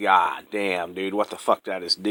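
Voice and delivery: put-on panicked voice. Retelling own words after driving a girl home: imitating own past panic. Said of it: "I'm fucking panicking".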